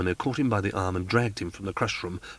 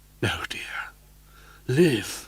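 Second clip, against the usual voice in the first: grave voice breaking, higher; 4 semitones higher than usual. Reading a character's goodbye line aloud: grave, breaking voice. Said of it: "said Christine in a grave and breaking voice".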